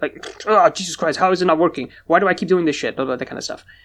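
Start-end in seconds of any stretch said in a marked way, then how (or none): 0.5-3.0 play-acted fed-up, frustrated, really mad angry rant. Retelling trying to connect for an arcade game: reenacting own frustrated rant. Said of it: "very frustrated with it. Like, real mad".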